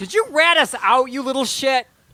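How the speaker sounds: furious, angry, flung out with voice high. Player voices a character who starts yelling at the PDA, screaming at the PDA. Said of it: "Forte also starts screaming at the PDA".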